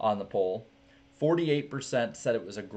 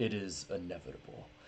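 deep voice dropped very low; 4 semitones lower, 9 dB quieter than usual. Reading out a racing line after suggesting Thanos voice: Thanos voice. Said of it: "in his Thanos voice for that one".

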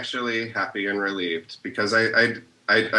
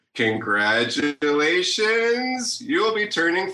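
game show host announcer voice, pitched up; 8 semitones higher than usual. Giving someone an introduction as if on a game show, in a game show host voice. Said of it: "do it as though you're on a game show".

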